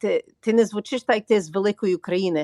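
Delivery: ordinary delivery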